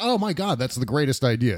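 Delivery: normal talking voice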